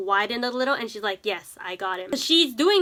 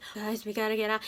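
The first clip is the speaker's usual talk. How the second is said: soft, trembling, frightened little pleading voice; 8 dB quieter than usual. Retelling how Nov spoke in the scene: imitating Nov's shaky, soft voice. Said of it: "His voice is all shaky and, like, like, soft".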